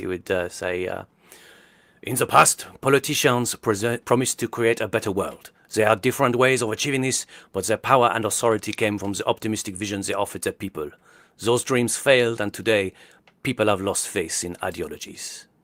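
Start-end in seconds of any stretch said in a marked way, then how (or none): 2.0-15.4 English spoken with a French accent. Doing an accent challenge, a French actor reading Adam Curtis: Richard Boringer doing Adam Curtis. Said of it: "Richard Boringer, the French, uh, actor who was in Cook the Thief, His Wife and Her Lover, doing Adam Curtis".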